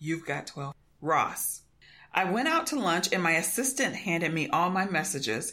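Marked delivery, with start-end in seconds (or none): 0.0-1.6 put-on quiet, calm voice, slower. Conan retelling his agent's phone call, retelling Gavin Palone's quiet, calm voice. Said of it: "in a quiet, calm voice".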